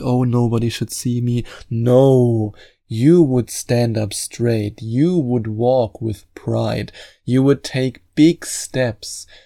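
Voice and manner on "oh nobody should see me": put-on insecure voice. Telling a listener how not to carry themselves, mock-insecure voice. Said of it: "being all insecure".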